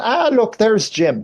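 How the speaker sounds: put-on Irish accent aunt voice. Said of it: "my aunt, also Irish, going".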